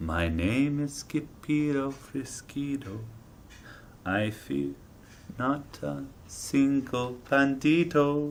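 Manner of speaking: very soft voice, very slow pace. Narrator reading a story character's spoken line, in a very soft voice. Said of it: "in a muy muy soft voice".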